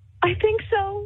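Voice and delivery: very high, jittery, nervous. A game show contestant, asked if ready for the mystery word, nervous. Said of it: "you sound so nervous".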